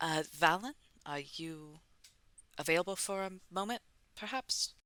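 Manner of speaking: awkward, careful, gingerly tone. Voicing a character slipping in without startling someone: quiet, very soft, awkward. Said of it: "kind of quietly and very soft".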